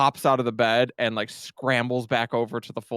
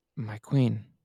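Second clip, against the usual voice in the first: hushed, lowered, deferential voice; 3 dB quieter than usual. Voicing a character who bows her head obediently: lowered voice. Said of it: "She kinda lowers her voice".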